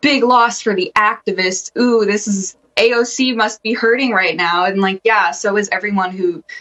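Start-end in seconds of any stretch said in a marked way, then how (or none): none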